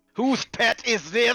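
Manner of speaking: annoyed and angry. Voicing a character who spots the party's pet: angry. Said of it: "he looks around angrily at everybody".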